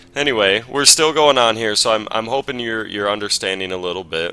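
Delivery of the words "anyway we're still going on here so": ordinary delivery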